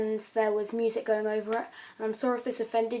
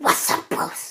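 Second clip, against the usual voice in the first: loud, raised voice, called out. Answering a request to do a PewDiePie impression: PewDiePie impression. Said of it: "it's a good impression".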